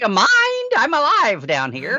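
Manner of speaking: high, indignant, aggrieved, put-upon alien voice. Riffing on a Star Trek trope, speak in an aggrieved alien voice. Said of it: "the new aggrieved, undiscovered alien voice".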